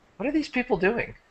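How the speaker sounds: soft, very high, effeminate-sounding voice. Telling a story, voicing a strange voice in the narrator's head: effeminate voice. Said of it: "Kind of effeminate voice".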